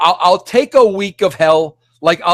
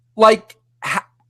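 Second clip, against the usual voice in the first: plain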